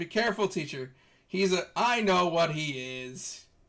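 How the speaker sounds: loud yelling. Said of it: "he yells".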